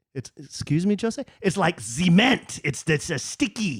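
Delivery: mock French accent with words drawn out.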